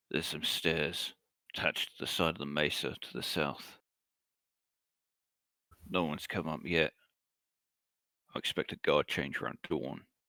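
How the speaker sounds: soft, low-pitched voice. A game master voices a companion reporting to the players, low voice. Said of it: "in a low voice says".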